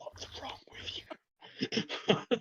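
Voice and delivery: hushed, breathy whisper under the breath. Retelling trying to be subtle with someone, whispering. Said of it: "I'm just like whispering".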